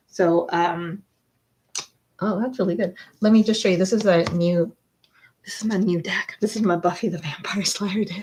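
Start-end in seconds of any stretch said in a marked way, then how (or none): 5.4-8.2 eerie, unsettling, creepy woman's voice. Speaker showing off a new deck, in a creepy woman's voice. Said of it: "I said it like that creepy woman".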